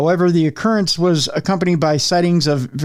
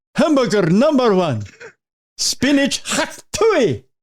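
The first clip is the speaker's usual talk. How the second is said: put-on bruiser voice, high and swooping; 7 semitones higher than usual. Showing the voice he likes to use when ordering at a restaurant: put-on ordering voice. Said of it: "when I'm ordering at a restaurant, I like to do that".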